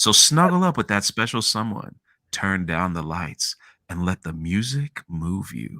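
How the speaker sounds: low, slow, easy late-night love-songs radio DJ voice. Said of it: "I'm like".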